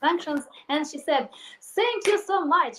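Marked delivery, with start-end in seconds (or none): 1.6-2.8 put-on heavy Russian accent, higher and louder. Retelling a blogger's video thanking the West for sanctions: imitating a heavy Russian accent. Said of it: "she used heavy Russian accent".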